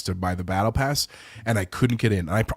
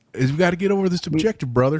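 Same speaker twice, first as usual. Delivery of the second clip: put-on Southern drawl, higher and louder; 9 semitones higher, 4 dB louder than usual. Imitating a friend's gaming voice for others: imitating Dan's Southern accent. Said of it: "That's what he does".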